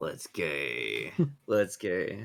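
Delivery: very low, quiet, dropped voice, drawn out. A tabletop player speaks in character during the game, voice a lot lower. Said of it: "Your voice got a lot lower for a second".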